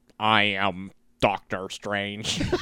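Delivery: slow, deliberate put-on American accent, trailer-voice style. Imitating a TV spot line in a put-on American accent: Benedict Cumberbatch's American accent. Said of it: "Speaking in his American".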